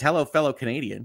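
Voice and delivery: ordinary talk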